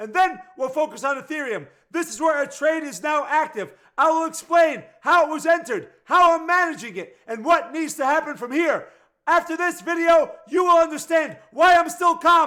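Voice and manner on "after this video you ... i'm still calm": loud yelling, shouting. Video host explaining an active Ethereum trade to viewers, yelling. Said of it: "even though I'm yelling at you".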